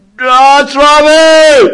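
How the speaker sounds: very high, slow, loud roar at full volume.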